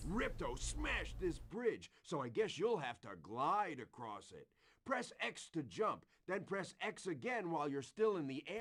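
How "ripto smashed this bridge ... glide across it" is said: low, heavily sarcastic delivery. A game character addresses the player at a smashed bridge, sarcastic. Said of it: "he said that so sarcastically".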